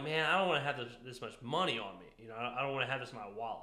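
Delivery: ordinary talk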